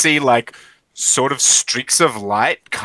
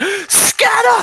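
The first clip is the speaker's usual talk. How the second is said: shrill, very high, barked shout; 3 dB louder than usual. Narrating a fight, voice the Banshee shouting to the group: Banshee shouting command. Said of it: "I think we hear the Banshee shout".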